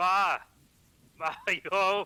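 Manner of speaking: loud, high character voice yelling. The narrator voices Siegfried calling out at his parents' home: Siegfried yelling. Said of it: "he starts yelling".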